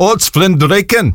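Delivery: amateur, attempted put-on Scottish accent. Answering a weather question with a Scots word, attempted Scottish accent. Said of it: "Forgive the attempted Scottish accent".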